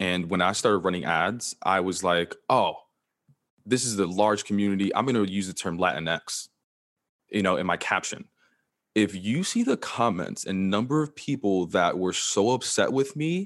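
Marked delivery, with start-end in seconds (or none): none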